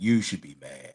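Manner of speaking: very low, deep bass register. Delivering a rallying speech, deep voice. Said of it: "deep voice".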